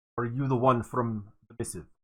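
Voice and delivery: clumsy, faltering put-on Russian accent. Playing a character, the speaker attempts a bad Russian accent. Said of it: "I'm trying to portray a Russian accent and I'm failing terribly".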